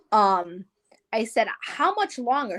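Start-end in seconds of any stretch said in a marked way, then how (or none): none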